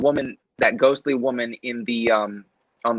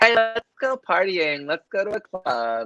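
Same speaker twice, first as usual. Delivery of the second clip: put-on pitched-up nineties high school girl voice; 8 semitones higher than usual. Describing nineties high school girls, the speaker acts one out: 90s high school girl impression. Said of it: "that's my impression of high school girls".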